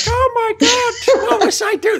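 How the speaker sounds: very high-pitched, dopey, stupid fan voice. Explaining the voices they use, the speaker mimics how a stupid fan talks. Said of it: "if it's a stupid fan, they go like".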